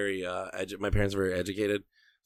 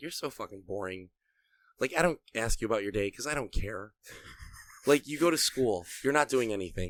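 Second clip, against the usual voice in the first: mock disappointed, let-down dad voice; 2 semitones higher than usual. Retelling what a dad said while handing over the paper: imitating a disappointed dad. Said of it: "he looked at me so disappointed".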